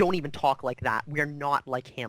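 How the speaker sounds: irritable, annoyed, snapped-out delivery. Game master voices a woman answering a player who wants to kill someone: snapping irritably. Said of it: "she like snaps at you".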